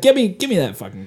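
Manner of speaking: ordinary talk, nothing marked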